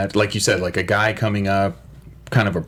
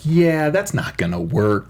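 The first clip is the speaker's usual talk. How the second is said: very sarcastic, dismissive mock tone; 6 semitones higher than usual. Speaker retells a woman's reply, mimicking her sarcastic tone. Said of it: "her tone was very sarcastic".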